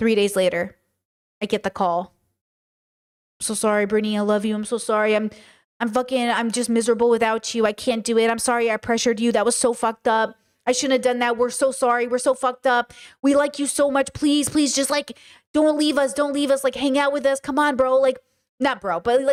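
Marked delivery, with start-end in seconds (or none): 3.4-18.0 mock groveling, pleading, begging tone. Retelling a call in which the ex apologizes: imitating someone begging. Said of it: "he comes back and he begs you".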